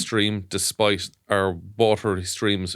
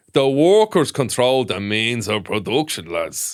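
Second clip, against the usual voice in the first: put-on Dublin accent, louder; 2 semitones higher, 4 dB louder than usual. Acting out Lenin speaking after discussing his Rathmines accent: Lenin with a Dublin accent. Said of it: "So this could be a real Dublin accent".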